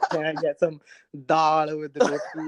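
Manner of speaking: ordinary talk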